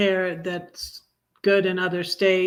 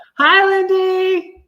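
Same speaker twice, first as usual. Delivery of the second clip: very loud, very high yelled voice; 12 semitones higher, 9 dB louder than usual. The speaker greets someone who is far away in california: yelling. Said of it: "I don't know why I'm yelling".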